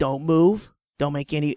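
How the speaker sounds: normal talking voice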